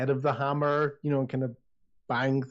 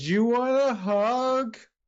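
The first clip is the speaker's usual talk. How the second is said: put-on very high drunken voice, hug drawn out; 10 semitones higher, 4 dB louder than usual. Voicing a stranger calling after a player's character walking away, very drunken voice. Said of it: "you hear a very drunken voice behind you go".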